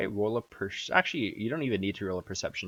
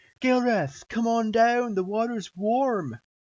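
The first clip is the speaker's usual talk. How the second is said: calling out loudly, higher and louder; 14 semitones higher, 6 dB louder than usual. Voicing a character calling up from the water: shouting up from below. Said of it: "and he shouts back up".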